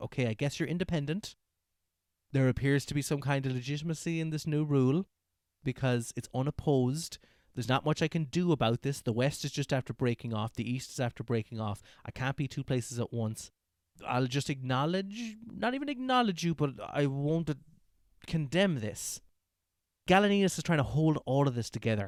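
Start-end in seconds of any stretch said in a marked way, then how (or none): none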